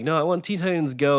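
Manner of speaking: put-on high little English boy's British accent. Recalling a young cousin demanding his cartoon; cousin's british accent. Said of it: "in his British accent".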